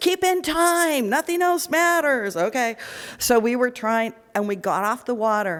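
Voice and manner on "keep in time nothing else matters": high-pitched, shouting voice. Retelling what the crew kept calling during paddling: imitating coaches yelling. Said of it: "They just kept yelling at us".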